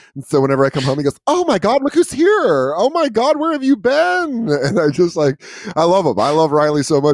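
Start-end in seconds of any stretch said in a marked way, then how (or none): 1.3-4.5 put-on very high-pitched old man voice.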